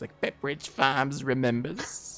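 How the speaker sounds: put-on gentle, quiet elderly voice. Welcoming a guest, the speaker shows a voice he's been practicing: Pepperidge Farm guy old-man voice. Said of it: "practicing my like old guy voice".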